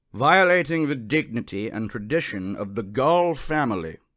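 grave, solemn, ceremonial intoning voice. A narrator reads a pronouncement against Jonathan Livingston Seagull: solemn intoning voice. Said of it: "the solemn voice intoned".

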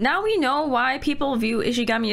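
tearful, with a catching breath, near crying.

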